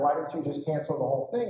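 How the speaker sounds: usual speaking voice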